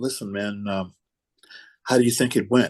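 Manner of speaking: whispered voice. Retelling what was said at dinner to John: retelling a whisper. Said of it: "And I whispered over to John".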